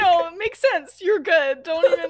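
mock shocked and hurt. Retelling how someone took the news: imitating someone hurt and shocked. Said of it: "shocked and low-key a little bit hurt".

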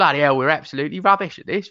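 put-on loud, jeering, abusive cockney accent. Recalling a West Ham match with mates, imitating cockney football fans. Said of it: "It's not a bad impression".

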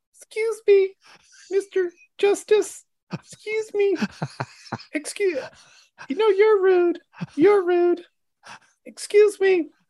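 put-on very high baby voice. Act out the babies who visited you in a drunken fever dream, as a Trump babies impression. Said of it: "I'm going to try to do an impression of the babies".

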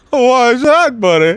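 half-hearted, careless delivery in a very high voice. Acting out a talk with guest Harlan: half-ass Harlan Williams impression. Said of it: "that's a half-ass impression right there".

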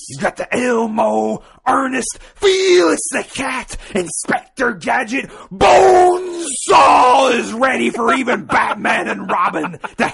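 very high, very loud, full-throated wrestler-style yell. Taking turns reading a letter line by line, in a Macho Man Randy Savage impression. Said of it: "he wants it read in a Macho Man Randy Savage accent".

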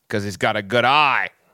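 bad put-on Australian accent. Speaker acting out the punchline of his baseball joke, terrible Australian accent. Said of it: "I do a terrible Australian accent".

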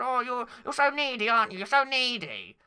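squeaky, whiny puppet voice swooping up and down. Outdoors, the speaker addresses someone nearby: sounding like Zippy from Rainbow. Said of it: "Why do you sound like Zip from Rainbow?".

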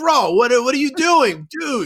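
high, mock exasperated yell, screaming.

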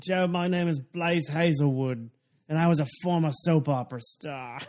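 clumsy, bad put-on Australian accent. Retelling an improv with Joe, introducing a made-up persona in a bad Australian accent. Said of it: "That was more Australian".

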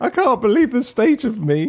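mock tearful half-sobbing voice. Retelling what another speaker said before missing a flight: imitating someone practically crying. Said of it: "you were sort of practically crying, going".

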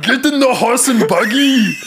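very high-pitched, loud, badly done Austrian accent. Doing a Western line as an action star: terrible Arnold Schwarzenegger impression. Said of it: "I do a terrible Arnold impression".

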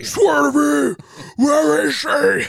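very high, rough, raw screaming rasp. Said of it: "smoked 10 packs of cigarettes".

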